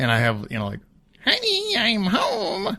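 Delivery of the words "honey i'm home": very high character voice, way up in a squeak. Acting out playing with figurines at home: Kerbal voice. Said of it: "That's my best Kerbal voice".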